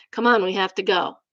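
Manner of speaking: mild, gentle parenting voice. Retelling how the mom calls her kid back from the tills: imitating a gentle parenting voice. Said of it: "says in that gentle parenting voice".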